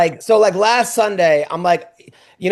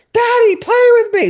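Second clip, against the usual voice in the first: put-on very high, shrieking, pleading child's scream; 3 dB louder than usual. Retelling how a daughter woke the speaker: imitating a child screaming. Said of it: "screaming in my ear".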